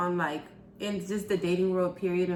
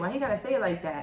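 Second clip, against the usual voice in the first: ordinary talk, nothing marked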